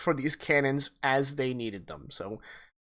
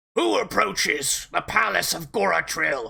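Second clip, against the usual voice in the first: stern, harsh, rough voice, radio-like; 3 semitones higher, 4 dB louder than usual. Voicing a radio contact who challenges a ship nearing the palace: harsh voice over radio. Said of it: "a harsh voice comes over your".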